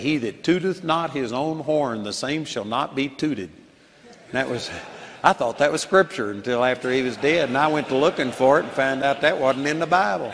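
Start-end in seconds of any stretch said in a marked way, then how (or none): none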